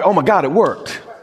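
put-on, overjoyed, surprised, excited delight. Picturing God surprised after creating the earth: mock excited happiness. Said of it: "he didn't get all happy".

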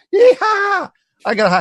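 very high, drawn-out, swooping excited whoop. Speaker recounts hearing Rhonda in the next room after a high score, imitating Rhonda yelling. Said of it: "She's, like, yelling and stuff".

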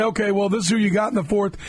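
ordinary talk, nothing marked

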